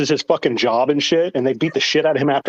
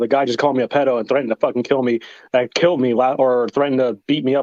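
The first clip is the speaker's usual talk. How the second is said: normal talking voice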